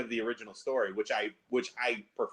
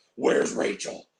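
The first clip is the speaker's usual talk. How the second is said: put-on gruff superhero voice, louder. Grabbing a daughter's shirt and doing a Batman voice at her. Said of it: "I do that voice to my daughter".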